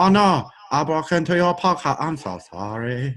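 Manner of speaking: put-on Filipino accent. Imitating the hacker from the Philippines: imitating a Filipino hacker's accent. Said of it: "Is that how he talks?".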